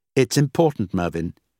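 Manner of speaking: ordinary delivery, nothing marked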